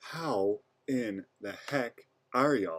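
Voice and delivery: soft, hushed half-whisper. Greeting video viewers at three in the morning, half-whispering. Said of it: "I'm whispering because it's like three o'clock in the morning".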